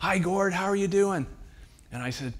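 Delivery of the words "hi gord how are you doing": loud, high-pitched call. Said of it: "And he yells up".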